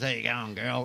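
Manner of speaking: a bit of a gruff put-on bloke's voice. Retelling how an aussie bloke greets people, imitating a gruff voice. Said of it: "it's got a bit of gruffy voice".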